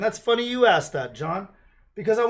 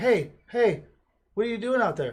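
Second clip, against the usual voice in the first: put-on young girl calling out. Picturing Labor Day, the speaker plays a girl calling out to dudes digging holes. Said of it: "I pictured like a girl going".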